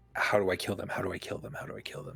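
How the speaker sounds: fast, excited, can't-wait eagerness. Voicing a character's thoughts during combat: excited, not panicked. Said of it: "more in an excited".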